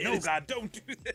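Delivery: acted-out yelling, very high pitch. Retelling how a wrestler reacted to a rival praying: imitating someone yelling. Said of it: "yelling up".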